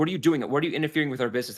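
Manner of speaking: challenging, confrontational soldier-like voice. Voicing soldiers who confront the party over their ballista: voicing soldiers confronting intruders. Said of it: "it's like".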